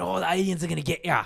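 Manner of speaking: put-on wild, rough, creaky screaming. Retelling how a man outside a corner shop was screaming: imitating a man screaming. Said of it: "he was just screaming".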